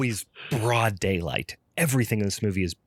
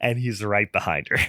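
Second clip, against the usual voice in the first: plain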